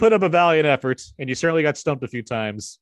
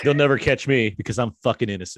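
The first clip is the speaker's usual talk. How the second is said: normal talking voice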